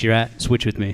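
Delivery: ordinary delivery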